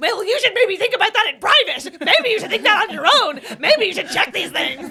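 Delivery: very high, shrill, very loud lecturing scolding. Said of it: "that was a good impression".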